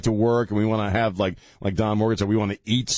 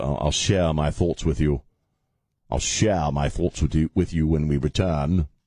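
fake British accent, lower pitch; 7 semitones lower than usual. Promising listeners to share thoughts when the show returns: put-on british accent. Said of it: "suddenly talking in a British accent".

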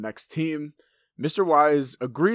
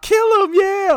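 very high, full-volume, shrill excited screaming cheer; 9 dB louder than usual. Retelling what a woman yelled out as a man got beaten up: retelling an excited yell. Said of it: "Sister Patterson starts yelling out".

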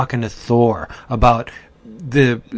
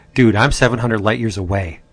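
normal talking voice

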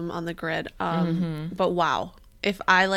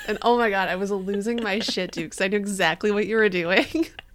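ordinary talk

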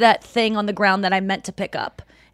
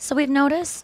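play-acted, pointed, pitched-up passive-aggressive tone; 5 semitones higher than usual. Imitating people who want a serious talk: passive-aggressive tone. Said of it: "have this tone with you".

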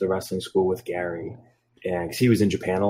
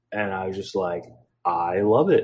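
normal talking voice

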